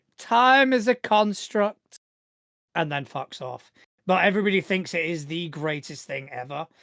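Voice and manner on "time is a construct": grandly obnoxious, pitched way up, drawn-out. Describing an annoying woman who walks in, imitating her mock-obnoxious tone. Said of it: "just says something obnoxious like".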